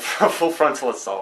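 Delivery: laughing through the words. Naming the game being played today, laughing while talking. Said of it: "I couldn't say that without laughing".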